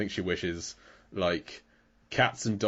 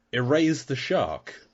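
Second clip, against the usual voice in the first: mock yelling, high-pitched scream; 5 semitones higher, 4 dB louder than usual. Recapping a shark scene, the speaker re-enacts screaming at the tv. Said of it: "I'm just screaming at the TV".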